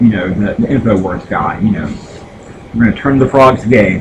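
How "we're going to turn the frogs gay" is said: plain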